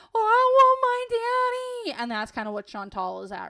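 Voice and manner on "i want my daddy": very loud, very high, drawn-out tantrum wail. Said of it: "toddler tantrum meltdowns".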